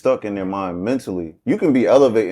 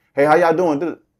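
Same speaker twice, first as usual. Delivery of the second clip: mock-friendly tone, much higher; 7 semitones higher than usual. Retelling how they greet someone from childhood while being fake: fake friendly greeting. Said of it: "I've actually encountered that where I'm being fake".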